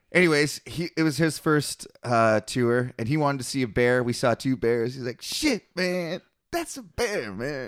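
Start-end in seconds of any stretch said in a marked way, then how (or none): 5.2-7.7 drawn-out, sing-song, slow, swooping, high-pitched voice. Retelling a friend seeing a bear on his first tour: imitating Randy's voice. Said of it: "I didn't do a very good Randy just there".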